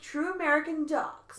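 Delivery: silly put-on American dog voice. Discussing a cats-and-dogs movie, describing the dogs in a put-on American dog accent. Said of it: "Are you laughing at my dog accent?".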